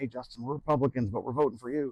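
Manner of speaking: imitated whisper. Retelling how supporters come up and confide their vote: imitating a whisper. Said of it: "they kinda whisper".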